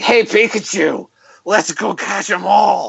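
raspy, slow, drawn-out heavy smoker's voice. Describing how the cartoon voice sounded in later seasons, raspy chain-smoker Ash voice. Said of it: "whoever was doing the voice of Ash is, like, a chain smoker. So it's like".

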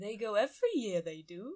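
amateur, put-on attempt at a Welsh accent. Repeating what a woman told a reporter, in an attempted welsh accent. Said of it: "I sound like Yoda".

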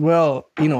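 ordinary talk

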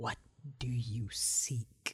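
soft, close whisper right at the ear. Narrator voicing an unseen voice close behind the listener's head, in a whisper. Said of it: "it sounds like a whisper this time".

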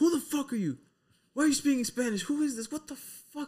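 play-acted very high, panicked, bewildered freak-out. Acting out a man woken by a Spanish radio show, imitating someone freaking out. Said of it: "The dude's just freaking out".

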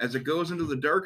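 ordinary delivery

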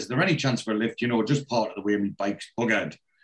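normal talking voice

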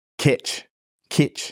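put-on New Zealand accent. Showing how a new zealand rugby player says a word, in that accent. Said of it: "in the accent of someone that plays rugby from New Zealand".

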